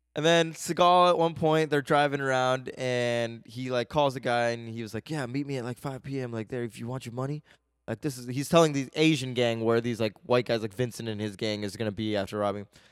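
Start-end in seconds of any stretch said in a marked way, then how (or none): 5.1-7.4 put-on sexy phone voice, quieter. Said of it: "Was that your sexy voice?".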